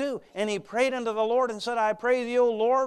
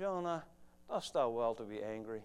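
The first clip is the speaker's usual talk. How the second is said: put-on calm voice, lower and quieter; 11 semitones lower, 12 dB quieter than usual. Retelling God speaking to Jonah, imitating God speaking calmly. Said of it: "God in a calm voice says to Jonah".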